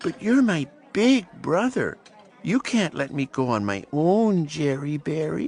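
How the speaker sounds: sweetest, sugary little coaxing squeak. Thea pleads with her big brother; squeaky sweet voice. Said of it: "she squeaked in her sweetest voice".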